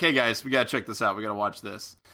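ordinary delivery

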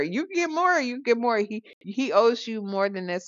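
high, pushy, egging-on voice.

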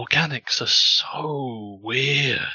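very slow, with each word drawn out. Voicing a quick cut to Seeker's perspective: Seeker's head voice. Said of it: "head voice".

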